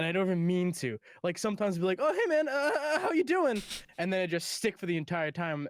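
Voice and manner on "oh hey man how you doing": very high, faltering, stumbling cartoon voice. Showing how slipping into a character voice sounds: Morty voice. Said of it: "I become Morty".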